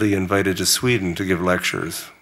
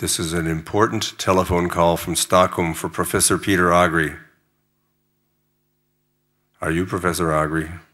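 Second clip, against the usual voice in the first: mock very serious, grave, solemn voice. Retelling an early-morning call from Stockholm, voicing the caller: imitating a very serious voice. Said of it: "It was a very serious voice".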